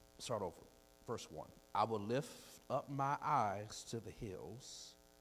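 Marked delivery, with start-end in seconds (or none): 1.8-5.0 very slow, drawn-out, deliberate reading. Speaker starts over reading aloud from verse 1, reading very slowly. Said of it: "I need to read this slow".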